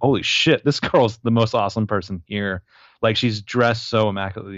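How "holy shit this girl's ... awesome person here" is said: ordinary talk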